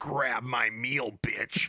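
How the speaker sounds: put-on horror villain voice. Mocking a Grinch promo note: Grinch as Freddy Krueger. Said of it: "He's like Freddy".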